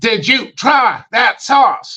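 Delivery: very high, sharp, choppy stop-start delivery. Retelling a speakerphone call with a guy's whole family; imitating his sharp, stop-start voice. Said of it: "like sharp. It's like stop and goes".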